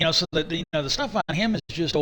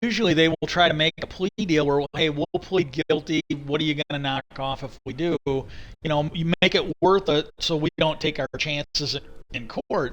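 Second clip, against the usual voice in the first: usual speaking voice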